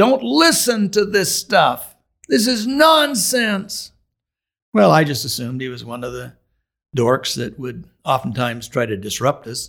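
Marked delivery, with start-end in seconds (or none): 0.0-3.9 loud, very high, drawn-out scream. Retelling a heckler interrupting an outdoor drama: imitating a man screaming. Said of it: "this loud voice screamed out".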